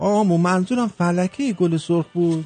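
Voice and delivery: mock-calm, nonchalant tone. Telling a joke, giving the husband's reply to his wife: acting calm and nonchalant. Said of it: "مرد با خونسردی میگه".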